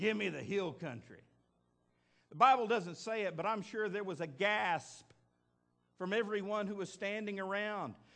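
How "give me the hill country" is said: West Texas drawl, lower. Retelling what a biblical man said as he stepped up, in a West Texas drawl. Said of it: "with that West Texas drawl".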